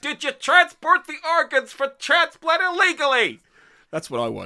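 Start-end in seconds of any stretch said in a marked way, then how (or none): 0.0-3.4 loud, very high-pitched voice. Imagining a character interrogating a suspect: Gordon Cole voice. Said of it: "And talking like this".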